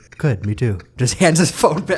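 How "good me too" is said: deadpan put-on teacher voice. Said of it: "so straight-faced about everything".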